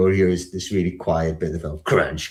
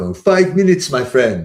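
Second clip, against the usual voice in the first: put-on higher-pitched Turkish accent; 8 semitones higher, 4 dB louder than usual. Retelling what the Turkish guy at the kebab place kept saying, Turkish accent. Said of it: "I won't keep doing the accent".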